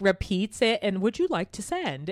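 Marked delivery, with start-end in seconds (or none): 1.0-2.1 put-on, pitched-up British automated-prompt voice. Retelling what the car says to send texts: imitating a British car voice. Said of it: "So it's in this British accent".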